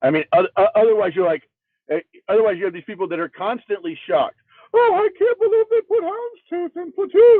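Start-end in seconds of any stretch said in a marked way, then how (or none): 4.7-7.4 very high, squeaky cartoon mouse voice impression. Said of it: "that's a better Mickey Mouse impression".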